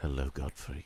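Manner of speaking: gentle, calming, warm, low, soothing voice. A talking pen greets Gottfried in a warm, soothing voice. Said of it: "It speaks in a warm, soothing voice".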